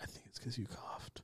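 hushed, hurried, very quiet whisper. Recounting what they told her at that moment: whispered. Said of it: "I kind of like whispered".

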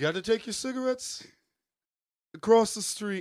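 put-on very high, loud, scolding old Yiddish-tinged voice. On a first date, told to add cigarettes, the speaker does a Bernie Sanders impression. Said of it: "That's a dynamite Bernie".

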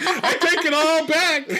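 very high, slow, giddy voice.

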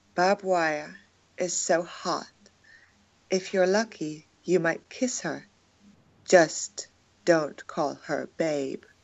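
public radio announcer voice. Reading a short haiku aloud for the group, in an NPR voice. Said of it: "You can do your NPR voice if you want".

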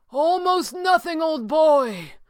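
very high, slow call, called out loudly. The sorcerer answers the red panda's question, calling out. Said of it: "the sorcerer called".

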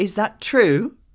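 high, slow, drawn-out posh British lilt. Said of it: "with, like, a British inflection".

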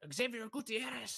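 put-on thick Mexican accent, very high, rolled r's. Retelling a teacher reading names aloud: imitating teacher's thick mexican accent. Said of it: "with this thick ass accent".

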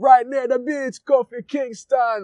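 terrible fake Jamaican accent. Redoing a catchphrase from an old character: terrible Jamaican accent. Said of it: "my Jamaican accent is terrible".

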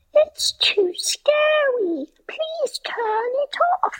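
put-on very high, slow British child voice. Speaker retells what their niece said: imitating British niece. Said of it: "You have a British niece?".

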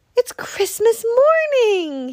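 very high, loud, joyful happy cry. Reading a Christmas story, the little hedgehog leaps out of bed, crying out happily. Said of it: "he cried happily".

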